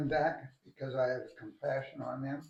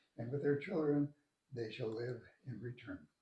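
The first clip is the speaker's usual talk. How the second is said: ordinary talk, nothing marked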